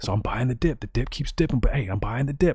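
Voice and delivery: mock secret whispering. Mocking someone secretly buying the dip, imitating a whisper. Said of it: "So I got to whisper".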